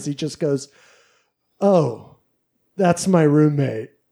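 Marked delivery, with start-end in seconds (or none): 1.6-3.8 put-on slow, deflated, let-down, disappointed tone. Retelling how Simon introduced him: imitating Simon's disappointed tone. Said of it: "I could hear the disappointment in his voice".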